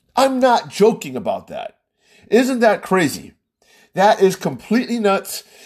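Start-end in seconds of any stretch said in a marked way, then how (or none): 0.2-3.4 worked-up, riled-up, agitated outburst. Talking about a death-certificate debate, getting too worked up. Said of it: "I'm getting too worked up about this".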